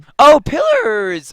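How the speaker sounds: voice breaking upward, very high and loud. Chatting in a group about video games, voice cracking. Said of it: "Oh God, my voice cracked".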